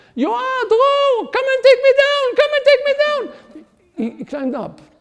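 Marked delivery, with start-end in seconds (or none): 0.2-3.7 booming, very loud, very high-pitched shout. Retelling how a child shouted from high up a tree: imitating a shout. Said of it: "he shouted".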